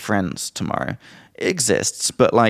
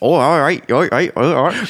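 Somerset farmer accent, pitched much higher; 5 semitones higher, 4 dB louder than usual. Speaker demonstrates how they sound around English people, in a Somerset farmer accent. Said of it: "I start sounding like a farmer".

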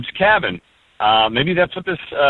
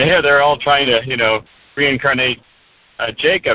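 normal talking voice

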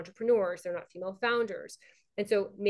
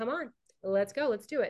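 normal talking voice

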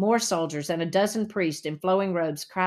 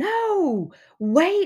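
very high, loud cry with stretched no; 12 semitones higher, 5 dB louder than usual. Hezekiah's mother, facing Uncle Messiah, crying out. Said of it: "she cried".

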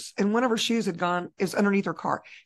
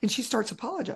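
ordinary talk

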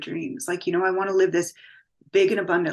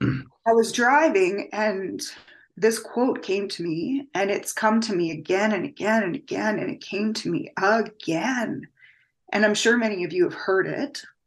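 emotional, visibly moved voice, holding it together. Speaker telling an audience about a quote that keeps coming back, getting emotional. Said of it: "I could get emotional. I'm sorry, guys".

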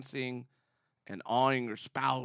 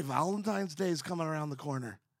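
put-on Scottish accent; 3 semitones higher than usual. Trying out accents with another host for listeners, speaking in a scottish accent. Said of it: "what about Scottish?".

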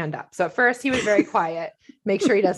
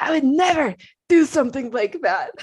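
put-on slurred speech, higher pitch; 6 semitones higher, 4 dB louder than usual. Retelling her husband's agitated denial, imitating slurred speech. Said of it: "but he's slurring".

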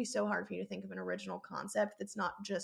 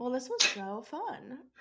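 sarcastic tone, higher; 4 semitones higher, 3 dB louder than usual. Wrapping up a podcast together: sounding sarcastic. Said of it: "why does it sound, like, so, sarcastic".

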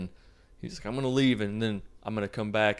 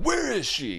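shrill, very high, badly acted mad outburst; 11 semitones higher than usual. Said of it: "He's all, like, mad".

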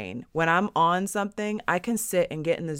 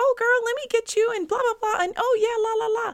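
very high, bubbly, gushing, extroverted salesy voice. Describing an extroverted selling style she never used: mock bubbly, extroverted sales pitch. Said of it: "you've never even heard me talk in that tone of voice".

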